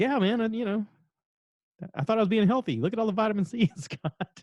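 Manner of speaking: timid, embarrassed voice.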